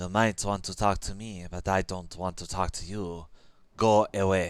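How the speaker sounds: hissing cat voice, put on. Narrating the story, voicing Frou Frou as the player draws near, hissing. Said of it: "Frou Frou hisses as you draw near".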